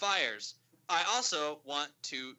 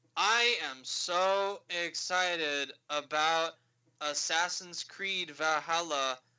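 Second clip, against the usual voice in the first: mock utterly bored, very slow deadpan drone. Imitating Phil Spencer at the Ubisoft conference: bored Phil Spencer impression. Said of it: "Phil Spencer just sounded like".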